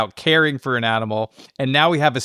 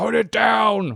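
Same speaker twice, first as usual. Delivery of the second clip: harsh, high, rough, barked shout; 9 semitones higher than usual. Recapping when Harry shouted at Josie last week, imitating Harry shouting. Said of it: "when Harry was shouting at Josie".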